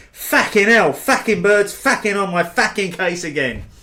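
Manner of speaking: mock East London accent. Quoting what Mark went on to say, Mark's East London Essex accent. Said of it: "my best East London Essex hybrid accent".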